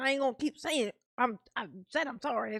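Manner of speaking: put-on aggressive tone, mocking. Describing how she apologizes, acting out her words: imitating an aggressive apology. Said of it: "the way that she says it sounds aggressive".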